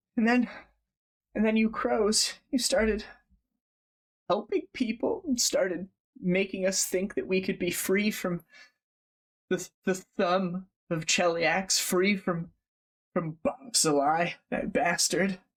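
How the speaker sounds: put-on tearful, grieving, sobbing, distraught old woman voice. Voicing a grieving grandmother talking about her lost grandchildren: distraught, sobbing old woman. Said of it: "very distraught and very upset".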